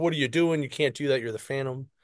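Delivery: ordinary talk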